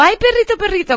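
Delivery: pitched way up, squeaky cooing voice. Showing how not to greet a dog at home, in a high-pitched voice. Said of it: "Con voz aguda".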